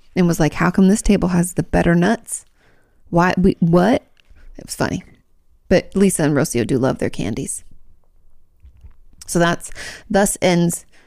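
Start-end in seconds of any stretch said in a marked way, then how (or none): none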